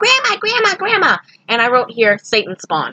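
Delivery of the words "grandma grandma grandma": put-on very high-pitched little-kid yelling voice. Retelling a little kid running in calling for grandma: imitating a high-pitched kid's yell. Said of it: "with a high-pitched voice yelling".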